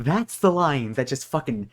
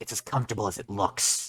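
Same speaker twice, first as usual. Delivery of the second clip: put-on gruff soldier voice, lower and quieter; 4 semitones lower, 9 dB quieter than usual. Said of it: "sounds kinda like Solid Snake".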